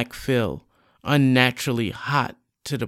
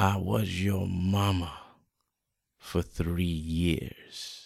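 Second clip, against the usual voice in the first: ominous, sinister, very low hushed murmur; 7 semitones lower, 8 dB quieter than usual. Narrator reads her speaking to him, in a sinister tone. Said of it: "She speaks to him in a sinister tone".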